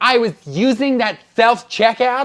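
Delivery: high, slow, loud, indignant tone.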